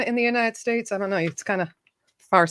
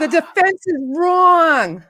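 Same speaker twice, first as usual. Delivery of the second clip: put-on New Jersey accent, higher and louder; 7 semitones higher, 5 dB louder than usual. Doing a quoted line for guessing players: Marisa Tomei accent. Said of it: "That's my Marissa Tomei accent".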